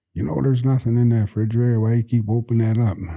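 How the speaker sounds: hollering, calling-out grandma voice. Retelling grandma scolding grandpa at the refrigerator: imitating grandma hollering. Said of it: "My grandma hollered at him".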